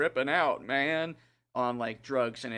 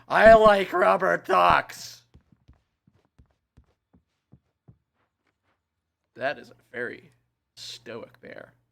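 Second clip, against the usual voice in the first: very loud, slow, high, unhinged cliché crazy voice; 6 semitones higher, 12 dB louder than usual. Commenting on a game scene, pretending to talk like a mentally ill person. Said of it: "I'm supposed to talk like a mentally ill person".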